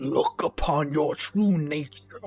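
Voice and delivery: low thunderous monster growl. Like a hulking, blood-soaked predator staring down a much smaller creature, making it face something it has been hiding from, voice low and thunderous. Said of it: "his voice a rumbling thunder".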